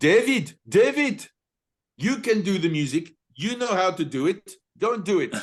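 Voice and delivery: put-on Dutch accent, pitched very high. Retelling how Greta tapped the speaker and told him to do the music, in Greta's Dutch accent. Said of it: "my best Dutch accent".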